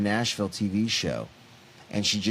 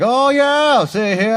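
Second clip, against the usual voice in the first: put-on country good old boy voice, very high, very loud; 14 semitones higher, 10 dB louder than usual. Retelling a guy who just starts talking to her: imitating a good old boy. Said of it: "Like, good old boy".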